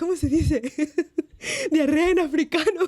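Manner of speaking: mock giggly, barely held-together, cracking-up laughter. Retelling her own joke question while cracking up, laughing while quoting herself. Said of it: "And I'm cracking up. I'm laughing".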